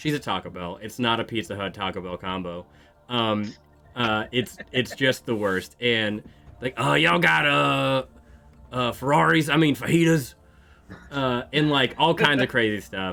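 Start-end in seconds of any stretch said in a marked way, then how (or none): 6.9-10.3 high, rough, creaky goblin voice. Retelling a customer ordering at a Taco Bell drive-through, goblin-like voice. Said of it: "the one lady who sounds like a goblin".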